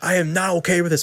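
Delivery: loud, high-pitched screaming. Retelling how a dad chased his daughter out: imitating a screaming dad. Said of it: "He's screaming at me".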